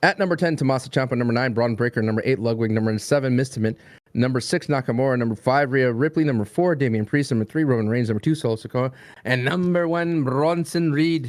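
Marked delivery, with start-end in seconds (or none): 9.2-11.3 slow, Irish-sounding accent. Announcing number one of a top-ten countdown, in an Irish-sounding accent. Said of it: "Why did you say it like a like an Irish person?".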